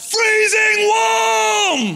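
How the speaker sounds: put-on shrill, high, loud toddler yell, warm, drawn out. Retelling a two-year-old son's shout during a game: imitating a child shouting. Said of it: "he just shouted out".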